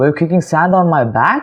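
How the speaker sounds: tune lifting upward at the end, question-like. Showing learners how to ask a question: rising question intonation. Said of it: "take the intonation a bit higher".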